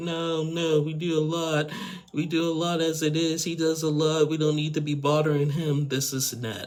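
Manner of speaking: mock dramatic, high, teary, pleading crying voice. Retelling how a woman refused to ask for help: imitating someone crying. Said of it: "she just starts crying".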